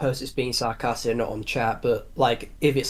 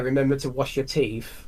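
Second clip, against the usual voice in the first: ordinary talk, nothing marked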